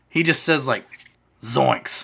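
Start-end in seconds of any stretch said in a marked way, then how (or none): 1.4-2.0 deadpan, flat, ordinary voice with no flourish. Retelling how an actor delivered a famous line: Matthew Lillard's flat Zoinks. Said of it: "Like in a regular person's voice".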